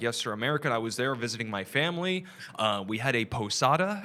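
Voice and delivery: ordinary talk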